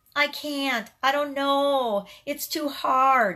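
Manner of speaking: very slow whine. Acting out saying I can't instead of a justification, whiny voice. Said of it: "that's not my best whiny voice".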